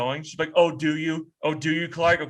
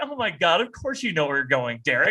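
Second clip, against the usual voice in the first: ordinary talk, nothing marked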